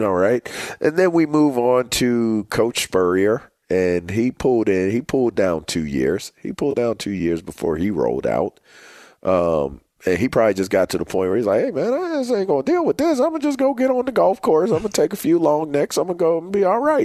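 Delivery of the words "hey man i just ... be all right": put-on voice, pitched very high. Imitating a departing coach who quits for golf: Steve Spurrier impression. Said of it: "pretty good Spurrier impression".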